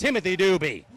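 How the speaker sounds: ordinary talk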